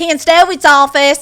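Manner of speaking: very loud, high, thick South Carolina twang. Retelling answering the agent's calls as an assistant: imitating own southern accent. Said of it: "with the accent, can you reel it in a little?".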